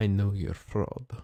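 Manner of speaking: hushed, secretive whisper, as if right in the ear. As Merlot passes, a player's character leans in to his ear, whispering. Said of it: "I want to just whisper in his ear".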